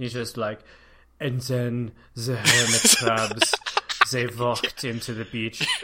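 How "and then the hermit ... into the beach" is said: put-on droll, deep German-accented narrator voice, louder. Imitating a documentary narrator with an inappropriate voice: Werner Herzog impression. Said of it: "pretty proud of that impression".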